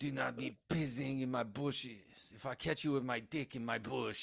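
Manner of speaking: soft, obnoxious, put-on French accent. Speaker retells a man yelling at a guy peeing in his bushes, obnoxious French accent. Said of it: "Like this obnoxious French accent".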